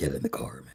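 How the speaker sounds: very low, very quiet, creepy, sinister put-on voice. Doing a voice that tells Amanda to get in the car: sinister put-on voice. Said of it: "gas from doing this voice".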